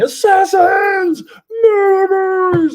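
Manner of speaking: crazed, very loud, high-pitched shouting. Retelling a scene where a crazed character yells at a stranger, retelling a yell. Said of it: "and he's yelling".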